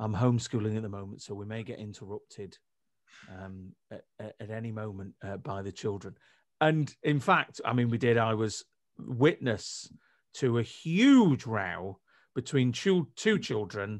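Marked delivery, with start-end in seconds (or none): 0.0-6.1 solemn, low, hushed, grave tone. Retelling what people say, imitating a voice that drops as if breaking bad news. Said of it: "the voice kind of drops as though they're about to break bad news".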